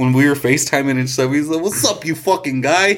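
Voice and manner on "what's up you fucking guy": put-on thick New York accent, pitched up. Retelling a friend's greeting on FaceTime: imitating Pat's heavy New York accent. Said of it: "His fucking accent".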